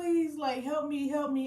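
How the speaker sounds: acted-out, breathless, high-pitched, desperate pleading tone. Retelling labor contractions that made it hard to breathe and talk: imitating her own begging. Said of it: "I'm begging".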